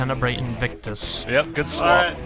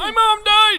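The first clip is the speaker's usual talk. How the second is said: put-on cartoon old-man voice, much higher; 4 dB louder than usual. In a comedy bit greeting Mardi Gras, doing a Grandpa Simpson voice. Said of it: "you sound like Grandpa Simpson".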